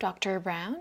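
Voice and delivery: pitch climbing through doctor brown. Demonstrating intonation in a request, rising intonation on Doctor Brown. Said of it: "We will have rising intonation".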